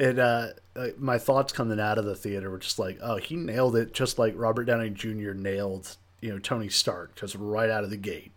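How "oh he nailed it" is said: usual speaking voice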